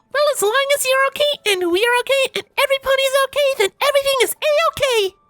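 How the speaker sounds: very high, bubbly, bouncy, chipper cheer. A pony bounces over to her friends, chipper Pinkie Pie cry. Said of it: "A chipper voice cried".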